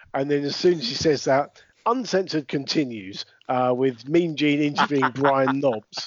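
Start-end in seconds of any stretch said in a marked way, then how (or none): none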